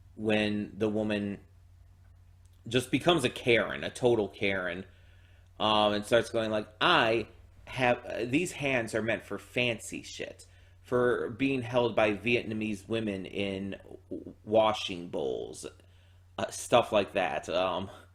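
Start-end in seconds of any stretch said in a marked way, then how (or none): none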